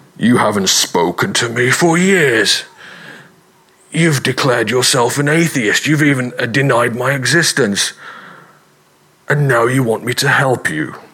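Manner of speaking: dark, foreboding, ominous villain voice. Telling a joke, voicing the voice that answers the man's prayer, a bit Darth Vader. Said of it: "that was a bit Darth Vader".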